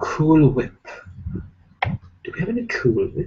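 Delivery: hushed, breathy, whispered cartoon voice. Answering viewer questions, then doing a Stewie impression. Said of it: "That's my Stewie impression".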